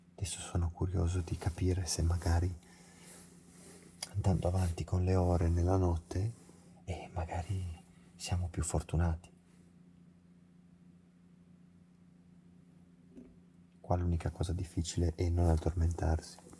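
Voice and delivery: quiet, hushed, soft speaking. Talking to the guys at night while someone is asleep, speaking softly. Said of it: "parlo piano perché dorme".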